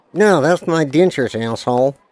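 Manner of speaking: put-on ventriloquist-style dummy voice. Doing a ventriloquist bit, in a ventriloquist dummy voice. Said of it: "That's me doing a ventriloquist thing".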